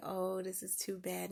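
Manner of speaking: usual speaking voice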